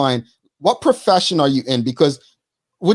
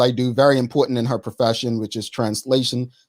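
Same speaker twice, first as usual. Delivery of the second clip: plain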